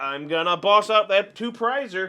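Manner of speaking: usual speaking voice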